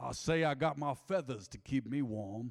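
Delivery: slow, drawn-out Southern rooster-like drawl. Joking about sounding like the big old rooster guy: Foghorn Leghorn voice. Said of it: "Foghorn something?".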